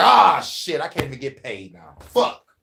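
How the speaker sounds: animated, swooping put-on executioner character voice. Acting out the executioner at a guillotine losing his pay: executioner voice.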